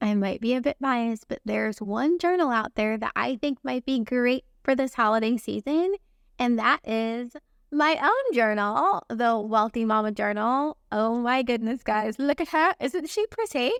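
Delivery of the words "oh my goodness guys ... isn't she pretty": gushing, excited put-on British accent. Showing her own journal to viewers, in an excited British accent. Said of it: "I get a British accent when I get excited".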